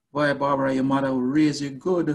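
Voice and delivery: Jamaican-style speech. Announcing it first, the speaker says one line in a Jamaican accent. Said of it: "I'll say it in a Jamaican way".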